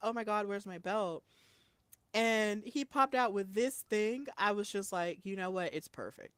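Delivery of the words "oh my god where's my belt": put-on panicked voice. Retelling a moment about a belt, the speaker acts out Trick imitating panicking. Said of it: "Trick was panicking".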